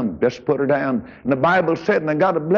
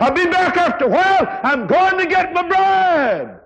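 mock, very high, ringing hollered shout; 3 dB louder than usual. Preaching, retelling a reply hollered back by one leaving; retelling a holler. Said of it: "And he hollered back and said".

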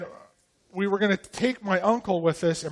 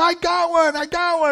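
put-on excited yell, higher, slower; 7 semitones higher, 9 dB louder than usual. Retelling a hunting morning when the kid found a squirrel, retelling an excited yell. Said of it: "and he yells again".

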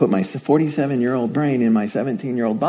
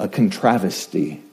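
"controversy" pronounced "contravesty" in Australian accent; 5 semitones lower than usual. Noting how Australians say the word controversy, Australian way of saying it. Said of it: "as the Australians say".

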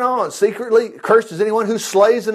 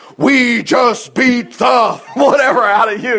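put-on giant man's voice, slower; 3 semitones higher, 4 dB louder than usual. Describing a deafening crowd heard in the background, imitating a giant man's voice. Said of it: "like one giant man's voice going".

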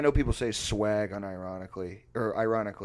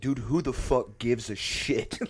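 put-on hostile, loud, aggressive, drawn-out outburst; 3 semitones higher than usual. Retelling snapping at a TikTok video: imitating own loud aggressive outburst. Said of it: "really loudly and aggressively".

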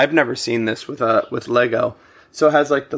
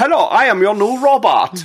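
put-on high, weird European robot accent; 9 semitones higher, 4 dB louder than usual. Describing a new robot that talks, speaker imitates its weird European accent. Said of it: "a weird like European accent".

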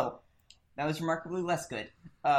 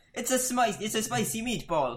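yelling out, higher pitch; 9 semitones higher than usual. In a tabletop game, a player's character gestures and is yelling out. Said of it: "I yell out".

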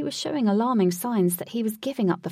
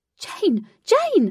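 sheer panic in a very high, shrill shout; 11 semitones higher, 5 dB louder than usual. Katie, as jane plunges into the boss's mouth: shouted in sheer panic. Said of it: "Shouted Katie in sheer panic".

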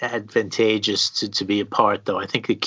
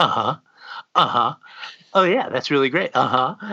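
put-on inattentive radio DJ voice, distracted and half-listening; 5 semitones higher than usual. Retelling a Wayne's World scene where a radio DJ ignores his guests: imitating a distracted DJ. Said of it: "he's not paying any attention to them".

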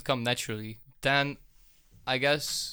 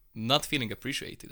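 ordinary delivery

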